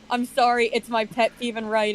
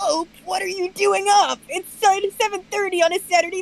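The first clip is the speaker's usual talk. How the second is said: put-on cartoon child voice; 7 semitones higher than usual. Asked for a sophisticated general's voice, but giving a saturday morning cartoon kid voice. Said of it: "not Saturday morning cartoon kid voice".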